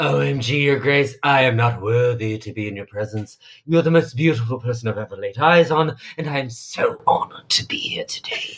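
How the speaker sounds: mock, overwhelming gushing adoration. Retelling Anne kneeling before the new queen: imitating Anne's gushing devotion. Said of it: "overwhelming sh-, show of devotion".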